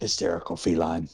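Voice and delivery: muttering under the breath. Voicing a character about to grapple someone: muttered under the breath. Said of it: "I just kinda mutter under my breath".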